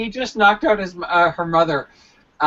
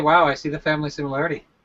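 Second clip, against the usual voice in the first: plain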